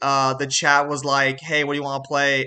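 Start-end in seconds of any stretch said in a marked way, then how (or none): none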